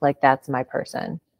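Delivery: ordinary talk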